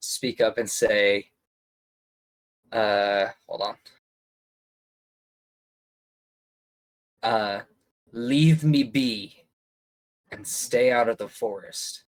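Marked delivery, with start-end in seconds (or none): 3.5-12.0 rough, gruff, aggressive voice. Playing a female voice confronting a stranger, in a gruff voice. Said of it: "Just like in a gruff speech".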